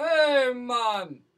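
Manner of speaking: put-on Jamaican accent. Answering a request to do reggae accents: put-on reggae accent. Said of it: "do reggae accents".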